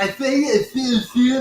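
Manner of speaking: high-pitched, stuttering, stammering cartoon voice. Imitating a daughter's reaction, stuttering Porky Pig voice. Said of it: "she sounds like Porky Pig when she does it".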